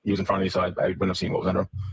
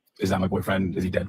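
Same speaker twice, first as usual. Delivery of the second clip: normal talking voice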